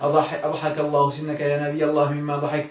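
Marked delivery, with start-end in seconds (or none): none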